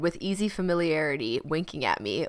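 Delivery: ordinary talk, nothing marked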